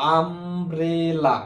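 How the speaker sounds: umbrella drawn out slowly, as if spelled out.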